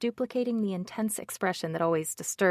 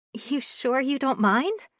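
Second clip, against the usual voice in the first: eager, breathless delight, high and raised; 7 semitones higher, 5 dB louder than usual. Reading a story, a woman thanking him: breathy and excited. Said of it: "Her words came out breathy and excited".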